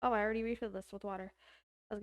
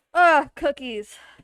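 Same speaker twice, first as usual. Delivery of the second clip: very loud, playful fake-angry outburst; 4 semitones higher, 15 dB louder than usual. Waiting on cookies before the rack, pretending to be angry at them: mock-angry. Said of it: "We gotta be all angry".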